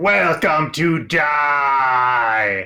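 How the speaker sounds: villain voice with the word "die" drawn out. Voicing the beholder greeting the group at the session's end: Xanathar voice. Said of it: "the beholder, known as the Xanathar, who says".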